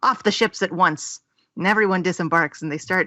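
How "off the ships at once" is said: usual speaking voice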